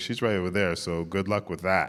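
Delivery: ordinary talk, nothing marked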